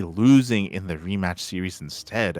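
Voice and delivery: normal talking voice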